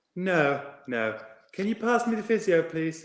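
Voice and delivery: put-on Irish accent. Retelling a man's reply on the phone to George, in an Irish accent. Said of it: "I'll try an Irish accent".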